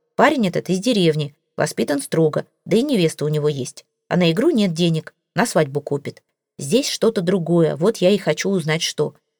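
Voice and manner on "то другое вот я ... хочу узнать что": ordinary delivery, nothing marked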